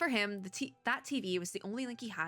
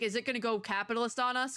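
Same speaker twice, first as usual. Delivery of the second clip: ordinary talk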